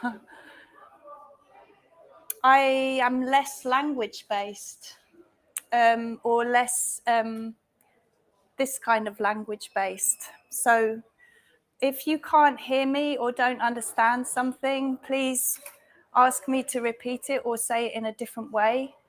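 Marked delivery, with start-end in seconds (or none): 2.4-7.0 speaking slowly on purpose. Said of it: "I'm going to speak slowly".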